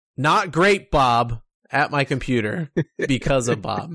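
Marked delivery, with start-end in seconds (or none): 0.2-1.4 a real, physical, loud shout. Speaker recalls yelling at the computer about the shop guy: retelling a shout. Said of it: "I have physically shouted".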